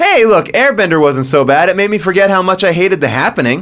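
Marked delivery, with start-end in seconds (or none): none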